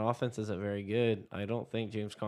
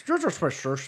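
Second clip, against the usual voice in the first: bad put-on Scottish accent, higher and louder; 6 semitones higher, 7 dB louder than usual. Saying the receiver's name as agreed: bad Sean Connery impression. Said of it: "really bad Sean Connery impressions".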